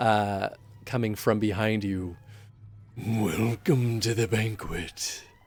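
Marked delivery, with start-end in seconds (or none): 3.0-5.2 demonic character voice. Voicing a demon greeting the players at a banquet: demon voice. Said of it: "you hear a voice".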